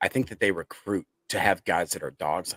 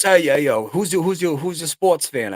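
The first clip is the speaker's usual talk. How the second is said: loud, high, put-on New Jersey accent; 9 semitones higher, 5 dB louder than usual. Retelling what a young coworker from jersey asked him at his new job, new jersey accent. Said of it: "He's from Jersey".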